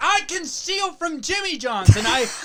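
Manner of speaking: mock very high-pitched, stretched-out shrieking. Acting out what his best friend screamed outside Jimmy John's: retelling a friend's screaming. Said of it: "but you were screaming. You're like".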